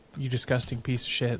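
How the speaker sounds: usual speaking voice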